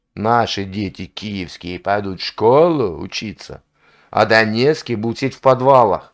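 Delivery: ordinary delivery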